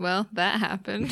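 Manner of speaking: deadpan put-on wizard voice. Imitating Gandalf reacting to a death, straight-faced Gandalf impression. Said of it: "straight face".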